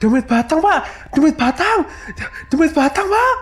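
very high, insistent, repeated cries. A villager shouts in front of a neighbour's house as families flee: shouting. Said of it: "Kata Parman berteriak-teriak".

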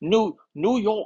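high, put-on New York accent. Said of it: "Is that a New York accent?".

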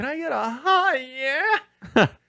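very high, carrying yell. Retelling calling up to a son's room: retelling a yell from downstairs. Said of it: "yell from downstairs".

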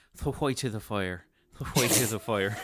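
put-on Irish accent in a low pitch. Asked for a bit of Irish dialect, the speaker obliges with an Irish accent. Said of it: "can we hear a little bit of this Irish dialect".

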